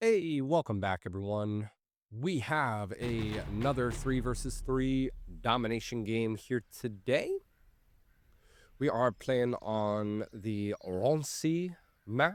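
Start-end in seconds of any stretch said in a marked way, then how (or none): 8.8-12.4 put-on French accent. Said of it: "My best, uh, French accent there".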